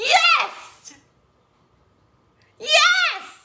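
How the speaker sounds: shrill, very high, screechy cry. Speaker shows listeners what to shout in a power pose, screechy yes. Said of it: "and I know I'm screechy".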